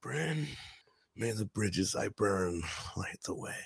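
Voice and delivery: barely audible breathy whisper. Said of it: "Do a quick [name] line for me".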